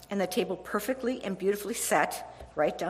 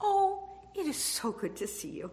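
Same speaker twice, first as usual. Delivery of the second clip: gracious, tender, gently sweet tone, acted out; 7 semitones higher than usual. Speaker retells her mom taking her hand, imitating Ruthie saying sweetly. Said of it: "and so sweetly said".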